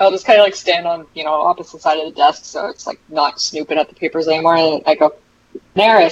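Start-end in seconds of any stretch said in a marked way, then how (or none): 5.7-6.1 loud, projected calling out in a raised voice. Standing across the desk and calling someone, name called out loudly. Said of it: "Like a raised voice".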